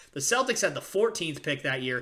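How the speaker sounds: ordinary delivery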